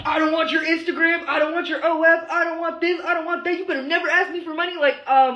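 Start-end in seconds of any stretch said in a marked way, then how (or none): 0.0-4.8 all-out, high-pitched screaming rant. Reading out men's dating app bios: imitating men screaming in dating bios. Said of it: "You're already screaming".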